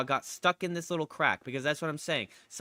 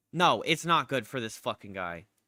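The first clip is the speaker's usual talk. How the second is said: normal talking voice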